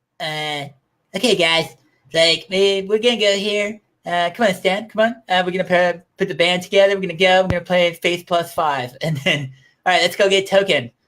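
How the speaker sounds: put-on cartoon kid voice. Speaker recalls impressions he used to do, then launches into one: Cartman voice. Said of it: "I used to be able to do Cartman too".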